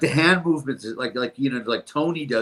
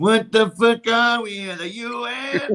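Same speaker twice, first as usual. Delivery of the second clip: high, very slow, word-by-word stretched delivery; 9 semitones higher than usual. Quoting a TV character's famous line: Johnny Sack impression. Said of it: "the other one is Johnny Sack, when he's like".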